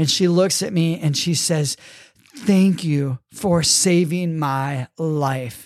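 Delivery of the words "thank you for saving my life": put-on tearful sobbing voice, lower. Retelling a rescued rafter thanking them: imitating someone sobbing. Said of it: "She's bawling her head off, crying, sobbing".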